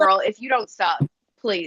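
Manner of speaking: ordinary talk, nothing marked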